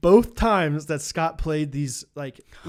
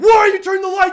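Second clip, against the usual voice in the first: shrill, high, very loud, furious angry yell; 9 dB louder than usual. Retelling a man getting mad when the lights came back on; imitating an angry man. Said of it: "he was like visibly mad".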